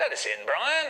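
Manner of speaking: bright, cheerful coaxing call. Retelling the dad calling through a bedroom door to the boys, mock-cheery call. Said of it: "says my dad cheerily".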